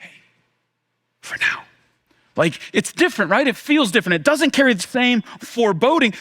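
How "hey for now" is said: soft whisper, quieter. Acting out someone coming up to a mourner: whispering. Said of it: "whispers to you".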